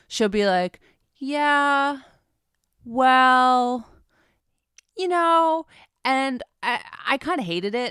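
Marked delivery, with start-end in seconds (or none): 1.1-5.6 very slow, halting drawl with long pauses, pitched up. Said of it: "I hate people that talk that slow".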